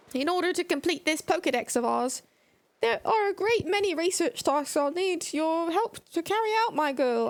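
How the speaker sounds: high voice, words pushed past a held-in burp. Reading a game's Pokedex dialogue aloud, the speaker is talking through a held burp. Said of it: "I have a burp in my throat, which is why I'm talking like this".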